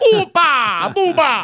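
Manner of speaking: put-on Greek accent. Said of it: "It does sound Greek to me".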